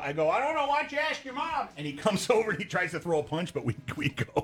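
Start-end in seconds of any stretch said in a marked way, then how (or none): 0.3-1.7 shouting, much higher and quicker. In a car at a stoplight, answering a man who yelled; retelling a yelled comeback. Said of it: "And I yelled out".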